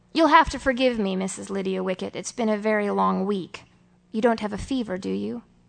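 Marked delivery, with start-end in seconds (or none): none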